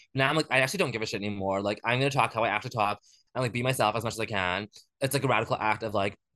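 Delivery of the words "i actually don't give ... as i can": plain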